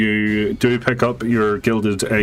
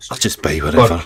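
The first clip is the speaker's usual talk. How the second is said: leaning in, whispering; 4 semitones lower, 4 dB louder than usual. Voicing a character who leans in to bargain under the table, whispering. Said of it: "he leans in and whispers".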